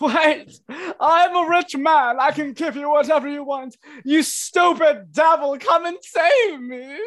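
shrill, very high, booming, loud panicked yell. Voicing a man held over a ledge who yells out for help: yelling in panic. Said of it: "he yells out".

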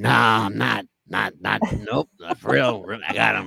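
put-on raspy voice. Retelling what a young guy told him, speaker imitates him in a raspy voice. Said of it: "he had a raspy voice he goes".

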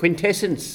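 put-on New Zealand shout. Imitating an actor shouting the name of an energy source. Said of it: "just Rhys Darby saying".

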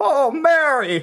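very high-pitched, exclaiming put-on voice. Asked whether the other can do a Jimmy, trying it: Jimmy Stewart impression. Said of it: "That's a pretty good Jimmy".

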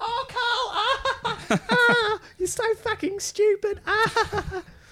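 very high, slow, drawn-out character voice. Mocking a comedian's view on cheap laughs: Ricky Gervais impression. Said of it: "I gotta get into character".

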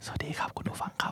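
hushed, breathy, very soft ASMR whisper. Showing how ASMR should sound, greeting listeners: soft whisper. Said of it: "มันต้องกระซิบกว่านี้ดีคือแบบ".

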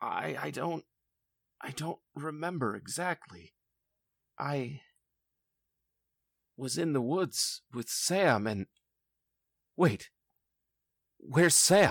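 sleepy, confused speech. A brother, found passed out on a table, is asked what happened; confused, sleepy speech. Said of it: "and [name]'s brother says, / in a very confused, sleepy sort of speech".

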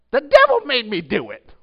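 booming, very loud, high-pitched comic line belted out. Retelling a comedy routine seen as a kid: imitating Flip Wilson. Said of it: "he would do a routine where he would get up and he would go".

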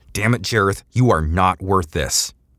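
shouting in pain, teeth clenched. Injured man testing his hurt arm, shouting in pain through clenched teeth. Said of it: "shouting in pain through clenched teeth".

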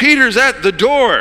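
thrilled, very high, drawn-out excited cry. Retelling a story, the speaker voices someone running back from the door, exclaiming.

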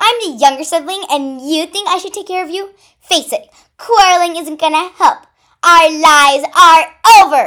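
very loud, shrill screaming. A younger sister argues with her older sister after both were caught, screamed. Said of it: "Pink Ruby screamed".

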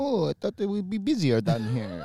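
put-on accent from Italy. Retelling what a former landlord at the bar says: imitating Santy's Italian accent. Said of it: "come down on a Monday night and be like".

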